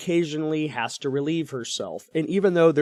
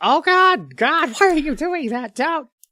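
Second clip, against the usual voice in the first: put-on screaming child voice, higher and louder; 12 semitones higher, 6 dB louder than usual. Retelling how two young children reacted to a jogger: imitating children screaming. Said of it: "They're screaming, like".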